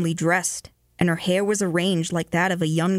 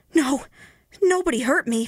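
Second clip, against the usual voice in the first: high, out-of-breath panting voice; 8 semitones higher than usual. A terrified man answers the soba seller's question, panting. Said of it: "panted the other".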